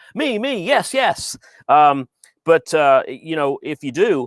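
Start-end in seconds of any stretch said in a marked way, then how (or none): 0.2-1.4 very high, bouncy, peppy cheerleader whoop. Asking the crypto traders in the room to give a shout, the speaker does a cheerleader-like cheer. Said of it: "I sound like a cheerleader, huh?".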